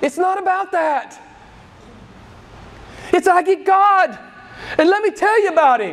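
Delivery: shrill, very high pitched, loud all-out shouting. Speaking to listeners, some of whom critique their yelling; yelling. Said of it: "I know I'm yelling a lot".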